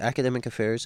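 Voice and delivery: ordinary talk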